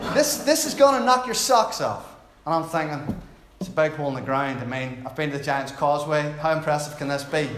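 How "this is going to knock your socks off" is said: put-on hyped-up American accent, raised pitch. Retelling what a man kept telling the speaker, in an American accent. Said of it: "that's my American accent".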